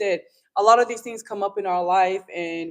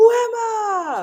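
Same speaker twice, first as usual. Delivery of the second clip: frustrated yell, higher pitch and louder; 5 dB louder than usual. Retelling a movie scene on a rooftop: imitating Jackie Chan yelling. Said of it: "and he's yelling".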